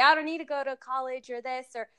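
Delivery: normal talking voice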